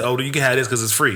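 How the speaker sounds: ordinary talk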